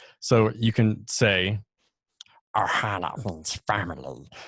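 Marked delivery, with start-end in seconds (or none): 2.6-4.3 put-on growling, strange creature voice. Showing that Gollum and Stitch from Lilo and Stitch sound the same, in a Stitch voice. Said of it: "Gollum is the same exact voice as Stitch from Lilo and Stitch".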